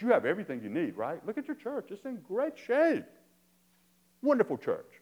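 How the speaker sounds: loud, high sarcastic tone. Explaining a Bible verse, acting out its speaker's words to a church, retelling sarcastic words. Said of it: "This is where he gets kind of sarcastic".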